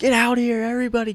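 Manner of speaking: loud shouting.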